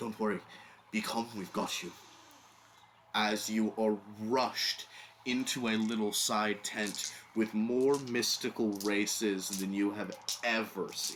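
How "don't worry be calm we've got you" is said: hurried, hushed, fast, very quiet whisper. Narrator voicing someone calming the listener as they're rushed into a tent, whispering very quietly. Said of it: "just whispering very quietly".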